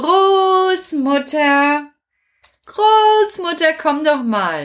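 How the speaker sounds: very slow, high, stretched-out, drawn-out shout. Voicing Kasperl in a puppet play, calling for grandmother: shouting for grandmother. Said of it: "Warum schreist du denn schon wieder?".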